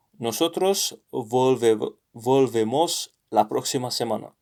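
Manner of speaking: ordinary talk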